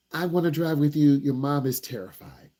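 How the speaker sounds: ordinary talk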